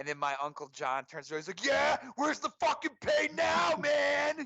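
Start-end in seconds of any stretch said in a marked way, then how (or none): 1.7-4.5 piercing, high-pitched, loud taunting shout. Recounting his uncle taunting a Bears fan at a game, retelling a yell. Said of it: "Like just yelling at him".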